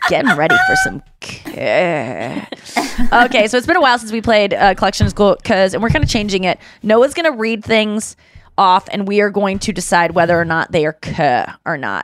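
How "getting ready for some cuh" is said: very slow, lilting, sing-song drawn-out drawl. Quoting the way Kristen says a favorite line: imitating Kristen. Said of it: "I love when Kristen says".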